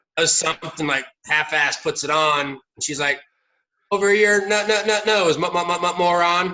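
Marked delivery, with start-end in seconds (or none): 3.9-6.6 put-on stuttering, glitching robot voice, higher and louder. Retelling how an android actor at a haunted house scolded a guest: imitating a glitching android. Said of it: "she was glitching like she was a, you know, like, an android".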